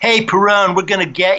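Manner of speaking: mock, high, shouted police-style hollering. Retelling what the cops yelled while banging their nightsticks, retelling the cops' yell. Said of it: "banging with their nightsticks and yelling".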